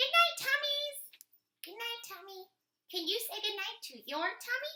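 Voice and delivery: very high, loud puppet voice. Reading aloud, the speaker voices a puppet assistant saying good night: puppet voice. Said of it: "reads aloud ... with her puppet assistant".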